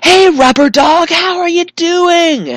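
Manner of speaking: very high, loud, drawn-out top-of-lungs scream. Retelling greeting someone heading to the same airport gate, retelling a scream at full lungs. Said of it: "I screamed at the top of my lungs".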